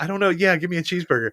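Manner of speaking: acted flustered, embarrassed tone. Retelling a student's reply during an online speech: imitating an embarrassed kid. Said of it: "the kid is so embarrassed".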